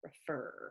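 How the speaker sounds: refer, with stress on second syllable -fer. Contrasting stressed and unstressed versions of refer: stress on second syllable 'fer'. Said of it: "I'm putting the stress on the er".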